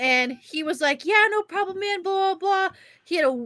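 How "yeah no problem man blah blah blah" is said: put-on laid-on thick Southern accent, pitched up. Retelling what a stranger at the airport said: heavy southern accent. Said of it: "very s-, heavy Southern accent".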